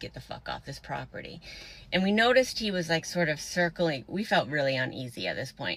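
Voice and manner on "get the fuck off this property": put-on menacing, aggressive whisper. Retelling what a man passing by said to them, in a mock-aggressive voice. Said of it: "said in like a aggressive voice".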